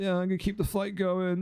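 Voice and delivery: high, groany put-on voice. Mocking another player's words by quoting them: imitating a groany voice. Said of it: "with your fucking groany voice".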